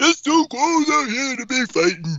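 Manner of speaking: put-on very high, boozy drunken voice. Retelling a remark by an onlooker at a fight: imitating a loud drunk guy. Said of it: "some loud Spanish guy who's probably drunk".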